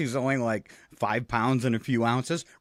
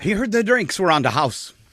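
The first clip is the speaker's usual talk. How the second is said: fake accent aiming at Irish, hard to place; 4 semitones higher, 4 dB louder than usual. Telling a joke about an Irishman and a ladder; unclear put-on accent. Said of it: "I'm not sure what accent that was".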